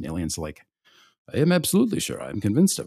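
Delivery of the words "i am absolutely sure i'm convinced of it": poorly done put-on Swedish accent, high and sing-song. Act out a man answering Penske, who asked if he is sure, in a bad Swedish accent. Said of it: "[name] cannot do a Swedish accent".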